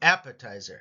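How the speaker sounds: first syllable AP of appetizer hit hard. Reading food words aloud, stress on first syllable AP of appetizer. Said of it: "The emphasis here is heavily on the A".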